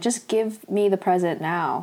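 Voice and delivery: ordinary talk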